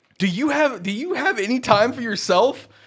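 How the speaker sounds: very high, loud, scolding reproachful yell. Retelling how a man yelled at the speaker about doing gig work, retelling a man yelling. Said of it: "He yelled at me".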